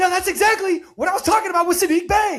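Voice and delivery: very high, loud, excited rapid-fire explaining. The speaker mimics a guy who loudly explains what just happened, imitating a fast, loud talker. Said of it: "higher voice".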